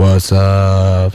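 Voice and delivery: smooth, low announcer-like voice.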